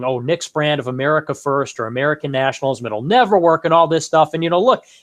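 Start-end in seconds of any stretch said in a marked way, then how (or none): none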